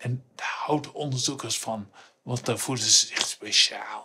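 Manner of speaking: whispered, very quiet, confiding aside. Explaining research results to the audience, whispering.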